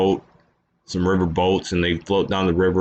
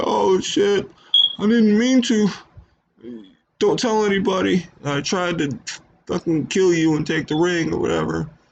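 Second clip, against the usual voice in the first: put-on very high-pitched tearful sobbing, crying babble; 12 semitones higher than usual. Retelling a movie scene where a character snaps out of it, imitating him crying. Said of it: "he starts crying".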